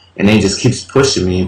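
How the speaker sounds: ordinary talk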